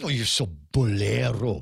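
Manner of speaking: low, drawn-out voice dripping with disgust. Showing how the word must be pronounced, said with disgust. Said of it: "You almost have to say it with disgust".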